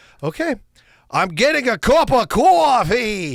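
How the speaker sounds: terrible put-on Brooklyn accent. Retelling how an officemate tried his accent when asked to, in John's terrible Brooklyn accent. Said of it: "It was the worst ac- Brooklyn".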